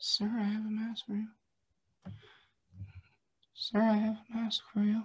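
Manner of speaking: barely audible, soft, high-pitched, polite, repeated words. Retelling a young lady offering a mask to a man: imitating someone speaking very quietly. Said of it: "As quietly as she possibly could".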